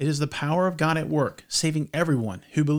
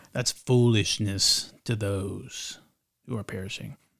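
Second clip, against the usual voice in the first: very deep, ominous, put-on scary voice; 7 semitones lower than usual. In a conversation about faith, delivering this line in a scary voice. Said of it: "that was a scary voice".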